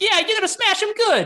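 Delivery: squeaky, loud troll voice. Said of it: "with the higher pitched voice".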